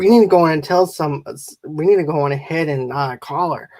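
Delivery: ordinary talk, nothing marked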